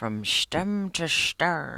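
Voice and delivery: put-on speaking with an Irish accent. Speaker addressing Pops in a message, repeating his old phrase: imitating Pops's Irish accent. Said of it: "how you talk in your Irish accent".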